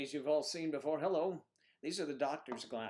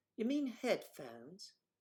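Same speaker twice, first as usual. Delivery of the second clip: put-on slow, deliberate British accent. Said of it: "You sound like you're British".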